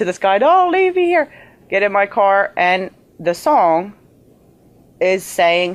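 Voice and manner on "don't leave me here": mock crying scream, very high. Retelling screaming to the sky on a country road: retelling own screaming to the sky. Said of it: "screaming in the middle of the sky".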